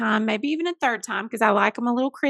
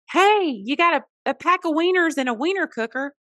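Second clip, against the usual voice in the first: put-on yelling, pitched up; 5 semitones higher than usual. Retelling what the principal yelled about a gift: imitating someone yelling. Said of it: "my principal comes yelling".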